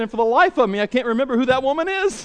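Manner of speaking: mock sudden alarmed panic, high-pitched. Telling a joke, the speaker quotes a man after a pause: mock panic-stricken voice. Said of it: "in a panic-stricken voice".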